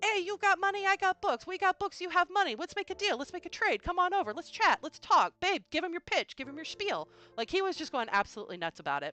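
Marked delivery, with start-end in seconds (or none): 0.0-7.1 put-on way-up, hyped, high-pitched New Jersey Italian accent. Retelling how the hype man pitched a trade to the speaker: New Jersey Italian accent. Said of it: "he's very New Jersey Italian".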